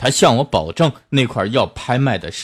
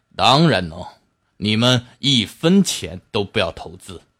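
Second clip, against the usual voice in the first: usual speaking voice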